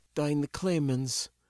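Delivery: tired, weary, worn-out muttering. Gaela, giving a small, tired wave, mutters tiredly. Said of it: "Gaela muttered with a small, tired wave".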